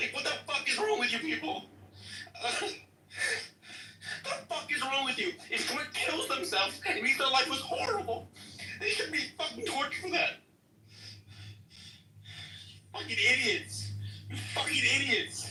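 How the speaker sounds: distressed, very upset, voice very high. Addressing the other speakers before apologizing to them: very upset. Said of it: "he sounded obviously very upset".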